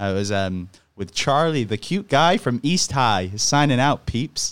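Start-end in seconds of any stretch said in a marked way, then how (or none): 1.0-4.5 bad put-on American accent, deliberately poor. Redoing an old line they once performed, in a bad american accent. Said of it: "I did a bad American accent".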